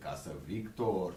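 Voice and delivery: daft, goofy, silly put-on stupid comic voice. Retelling what they think driving past a place: stupid voice. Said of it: "in a stupid voice".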